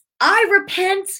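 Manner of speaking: roaring, whole-hearted voice. Recounting praying while pacing the floor; reenacting a loud prayer. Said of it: "But I was like loud".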